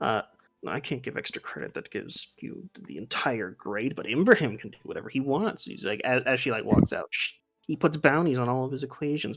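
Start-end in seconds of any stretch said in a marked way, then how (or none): 0.7-5.6 muttered, much quieter. The narrator voices Dika during class, muttering under her breath. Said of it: "mutter under her breath".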